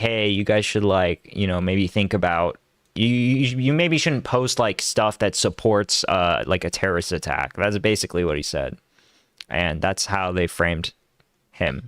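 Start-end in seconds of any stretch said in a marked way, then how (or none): none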